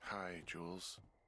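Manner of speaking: tired, sleepy-sounding voice. Woken up and asked to pick up the radio: sounding tired. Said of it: "you sound tired".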